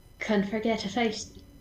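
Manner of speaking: put-on speech with an Irish accent. Voicing a character during a role-play game, in an accidental Irish accent. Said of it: "that's the wrong accent".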